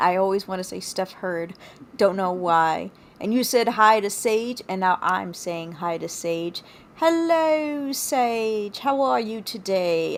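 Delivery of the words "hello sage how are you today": terrible put-on British accent, slow. Saying hi to Sage in a terrible British accent. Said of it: "my British accent is terrible".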